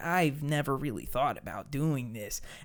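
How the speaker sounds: soft, meek, hesitant, timid nice-guy voice. Describing Mickey in the film, doing a put-on timid Mickey voice. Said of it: "the most timid, nice guy".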